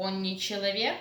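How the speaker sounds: rising pitch on человек. Russian lesson contrasting statement and question, rising intonation on человек. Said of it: "Rising intonation".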